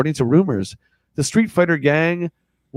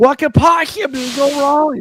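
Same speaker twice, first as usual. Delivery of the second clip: put-on nerdy voice, much higher; 10 semitones higher than usual. Describing to friends how Bubsy talks, in a Bubsy nerd voice. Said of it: "like the nerd voice you do?".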